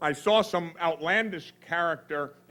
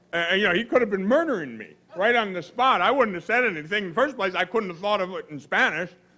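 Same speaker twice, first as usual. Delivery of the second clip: ordinary talk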